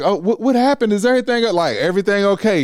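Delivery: mock flustered, high, panicked stammering voice. Retelling a phone call with a cousin: imitating a panicked voice. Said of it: "I can hear panic in her voice".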